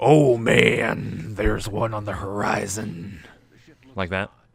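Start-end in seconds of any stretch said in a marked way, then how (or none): 0.0-3.2 loud, very slow, drawn-out pro-wrestler promo voice. Asked to do a better version: Macho Man Randy Savage voice. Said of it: "can you do a better one there?".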